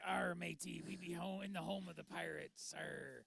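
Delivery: slow, rough, salty sea-dog pirate voice. Retelling talking in pirate voice last night: pirate voice. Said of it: "I talked in pirate voice last night".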